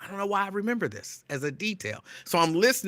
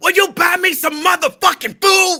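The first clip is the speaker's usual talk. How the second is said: shrill, very high, very loud yell; 13 semitones higher, 11 dB louder than usual. A speaker repeating what a woman shouted, retelling a yell. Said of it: "she yelled it at the top of her lungs".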